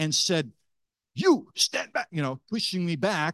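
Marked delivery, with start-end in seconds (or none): 1.2-2.1 put-on, loud, very high shout. Recounting a confrontation over a bag, the speaker retells a man's loud shout. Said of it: "with an even louder voice, shouting at me".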